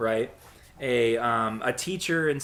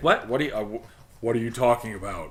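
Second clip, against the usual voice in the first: put-on electronically disguised voice. Retelling a TV scene, doing Roy Harper voice-modulated voice. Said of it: "With his, like, voice modulation".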